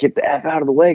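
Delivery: put-on hollering tone at half strength, mildly yelled. Retelling what another rider yelled after the finish line: imitating someone yelling. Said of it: "he's just yelled".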